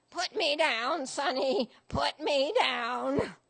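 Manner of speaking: put-on rasping, raspy old granny voice. Reading a story where a granny at airport security answers a young agent, rasping. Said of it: "She rasps".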